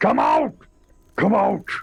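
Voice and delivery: shouting orc voice. Game master voicing an orc searching for a hidden player: yelling orc voice. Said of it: "he's just yelling and saying".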